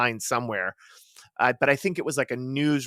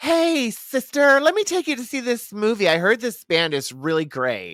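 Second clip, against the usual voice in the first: put-on effeminate voice, very high and swooping; 11 semitones higher, 6 dB louder than usual. Retelling what a man said to her, in an effeminate put-on voice. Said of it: "That effeminate voice you just did".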